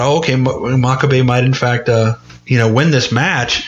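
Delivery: ordinary talk, nothing marked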